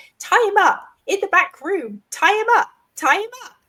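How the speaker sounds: very thin, high voice. Recounting another figure's line, in a very thin voice. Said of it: "in this very sort of thin voice".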